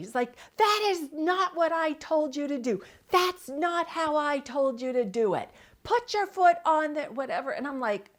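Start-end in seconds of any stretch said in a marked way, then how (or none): 0.6-7.5 loud, high-pitched shouting. Retelling how dad yelled instructions from below the roof: imitating dad yelling. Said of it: "he starts yelling at me".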